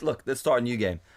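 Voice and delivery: plain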